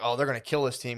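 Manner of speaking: normal talking voice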